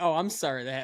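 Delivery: play-acted insincere, perfunctory tone. Imitating another speaker's apology to tease them: mocking an insincere apology. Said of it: "the most insincere".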